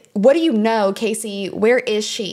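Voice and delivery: ordinary delivery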